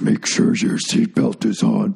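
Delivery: rough, creaky, raspy announcer voice. Retelling a flight attendant's seatbelt announcement in a Darth Vader voice. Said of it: "the guy's doing a Darth Vader voice".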